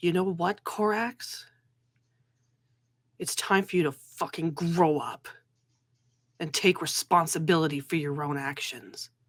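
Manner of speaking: low, firm, serious dressing-down tone. A game narrator voices a character leaning down to address another, low, firm voice. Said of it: "in a low, firm voice".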